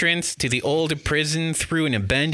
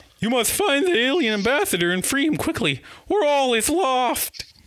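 squeaky, cartoonish voice; 11 semitones higher than usual. A game narrator voices the professor after a mainframe alarm: Professor Marsden voice. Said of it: "Professor Marsden says. / the professor says. / [name] is a scientist. / Was it the Mr. Magoo? What's the cat's name? It wasn't Snagglepuss. It was the one from Wacky Races that I said didn't exist. S".

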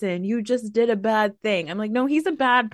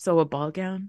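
mock deadpan, very dry delivery; 4 semitones lower than usual. A speaker retells a woman's reply about what to wear to a party, retelling a very dry line. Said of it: "So she very dryly goes".

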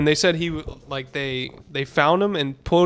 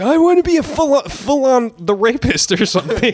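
high, loud, confused, fumbling voice; 8 semitones higher, 5 dB louder than usual. Retelling a sitcom scene where Charlie gets confused by a word: imitating Charlie. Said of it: "Where Charlie, he gets confused with the word philanthropist. He's like".

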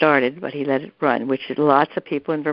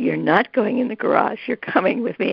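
higher-pitched yelling; 4 semitones higher than usual. Retelling a house fire, quoting own words to a spouse: retelling own yell. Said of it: "And I was yelling, really yelling".

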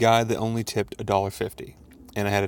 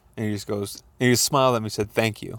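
ordinary talk

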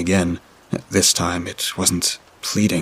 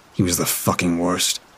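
ordinary delivery

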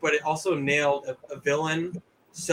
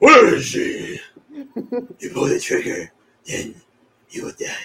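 put-on gravelly superhero voice, higher and louder; 7 semitones higher, 7 dB louder than usual. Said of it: "people just imitated his voice".

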